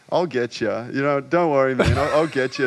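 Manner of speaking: acted laughing, giggly, easygoing, reassuring tone. Retelling a reply to a heckling dancer: imitating own giggling reply. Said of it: "I was just kind of, like, giggling".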